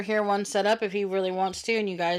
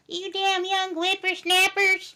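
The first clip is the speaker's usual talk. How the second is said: put-on old woman voice, much higher; 10 semitones higher than usual. The speaker complains about young people, then slips into an old woman voice. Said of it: "now I sound like an old woman".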